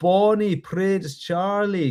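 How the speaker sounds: put-on Scottish accent, spoken slowly. Leading a group in repeating Scottish words, in a Scottish accent. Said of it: "give me your best Scottish accent".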